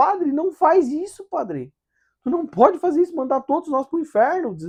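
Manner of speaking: very high, loud, desperate sobbing voice. Retelling a girl bursting in crying to beg the priest, imitating a girl crying desperately. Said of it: "ela entra chorando, desesperada".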